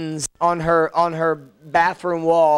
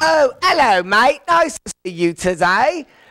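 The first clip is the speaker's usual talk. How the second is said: put-on stock English accent, pitched high; 6 semitones higher, 3 dB louder than usual. Explaining how most people picture england's accent: stereotypical english accent. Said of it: "when you say England, they're like".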